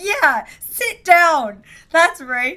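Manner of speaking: mock stern teacher yell, loud, very slow, drawn out. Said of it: "my teacher voice of yelling back at them".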